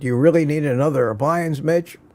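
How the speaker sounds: usual speaking voice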